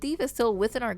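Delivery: ordinary delivery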